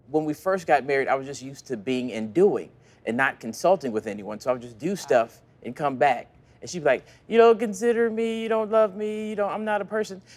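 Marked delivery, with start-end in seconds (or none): 7.3-10.3 mock nagging, complaining voice, high-pitched. A husband retelling his wife's complaints early in their marriage, imitating a nagging voice. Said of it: "That was a nagging voice".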